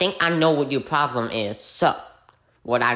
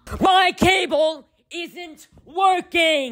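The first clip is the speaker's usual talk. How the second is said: very high yell, each word drawn out; 14 semitones higher, 4 dB louder than usual. In a skit, a customer on a support call yells at the agent about the cable. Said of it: "there is no need to yell".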